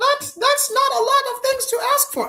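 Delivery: high, loud mock protesting squeal.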